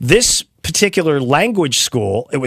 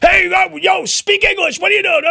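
very high-pitched, loud yelling. Joking about scaring learners like the exchange floor does: imitating Wall Street floor yelling. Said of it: "start yelling like they do on the Wall Street".

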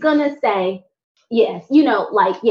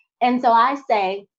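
ordinary delivery

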